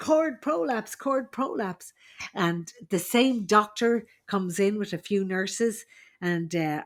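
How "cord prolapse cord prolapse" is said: put-on urgent, alarmed shout, high and repeated. Retelling an emergency in a delivery room, retelling her own shout. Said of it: "and I'm shouting".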